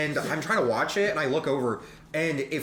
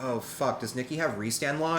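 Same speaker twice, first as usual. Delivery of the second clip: plain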